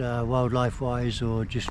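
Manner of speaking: normal talking voice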